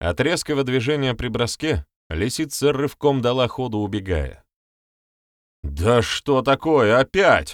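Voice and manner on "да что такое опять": loud, deliberate, drawn-out exclamation. The young man exclaims as the fox gets away from him, exclaiming. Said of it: "воскликнул парень".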